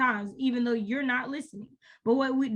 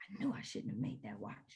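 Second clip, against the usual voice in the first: very quiet, breathy whisper under her breath; 15 dB quieter than usual. Narrator voicing a woman who just growled in frustration: whispering. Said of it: "she whispers it".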